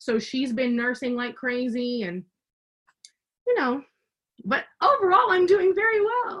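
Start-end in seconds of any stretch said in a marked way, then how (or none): 4.4-6.4 pitch climbing to a very high finish. Saying how the speaker is doing overall, voice rising at the end. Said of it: "the voice went up at the end".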